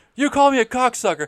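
very high, very loud, shrill screaming. Retelling a movie argument scene, imitating Kevin Costner screaming. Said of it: "When Kevin Costner is screaming".

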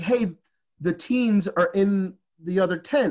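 ordinary delivery

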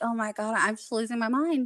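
plain

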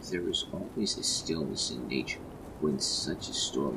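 ordinary delivery

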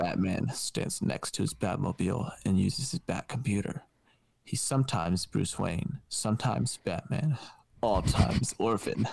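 storybook narrator voice, told like a storyteller. Doing an improvised Batman scene, switching in to narrate: narrator voice. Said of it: "let me get to my narrator voice".

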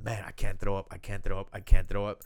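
put-on panicked nerves. Retelling pounding his chest in a restroom, acting out past nervousness. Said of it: "I'm so nervous and I'm just pounding my chest".

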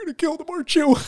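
mock weird, very high, choked-up voice. Describing a movie scene, acting out an actress's line: imitating Rebecca Romijn choked up. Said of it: "gets this weird choked up voice where she's like".

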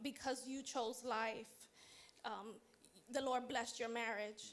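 usual speaking voice

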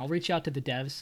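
ordinary talk, nothing marked

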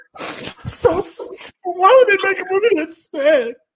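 acted, very high, tearful, sobbing speech. Retelling a woman's question after watching a movie, imitating Phaedra crying. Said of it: "And she's still crying".

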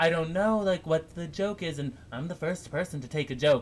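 put-on perfect, clean American accent. Retelling a celebrity's Instagram story, Hilaria Baldwin, perfect American accent. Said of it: "she says in a perfect American accent".

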